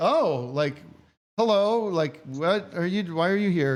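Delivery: mock slightly freaked-out, taken-aback, a little horrified tone. Retelling someone's reaction to the speaker: imitating someone a little horrified. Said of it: "a little horrified".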